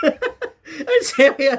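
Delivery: high, slow laughing fit.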